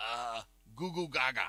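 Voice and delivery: put-on very slow, drawn-out infant gurgling baby talk. Retelling a movie scene where the baby brother answers: imitating baby talk. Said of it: "his baby brother could talk".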